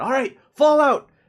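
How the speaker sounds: shrill, very loud, high-pitched yelling. Voicing a dwarf leader ordering everyone out: NPC yelling an order. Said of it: "yells in Dwarvish to everyone".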